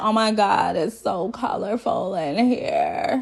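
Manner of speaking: mock slow, dramatic delivery. Retelling what Ryan said on seeing an apartment: imitating slow, dramatic talk. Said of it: "he talks slow and dramatic".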